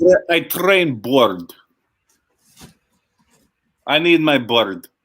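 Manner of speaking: put-on loud, high, mangled and incoherent Russian accent. Joking with a co-speaker who brought up the actor's awful accent, Mickey Rourke Russian accent. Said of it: "very Mickey Rourke Russian accent".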